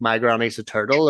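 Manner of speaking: normal talking voice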